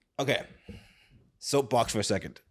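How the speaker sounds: ordinary delivery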